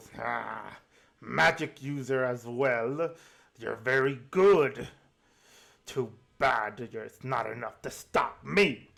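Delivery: slow, growling villain voice. Narrator voicing a priest stumbling back from a magic user, growling villain voice. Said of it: "he looks and he growls and goes".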